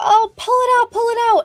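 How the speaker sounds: very high, shrill yelling. Retelling a mom's reaction to a tick in her child's hair: imitating someone yelling. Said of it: "the mom's yelling at us".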